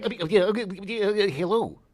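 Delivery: high stammer. Answering a list of cartoon characters with a Porky Pig voice. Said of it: "Porky Pig".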